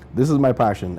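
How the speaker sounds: usual speaking voice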